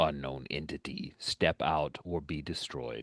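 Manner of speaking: deep, warbling, modulated robotic droid voice. Game master voicing a super battle droid calling out to a player, deep, warbling, modulated. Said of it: "in that deep, warbling, modulated voice".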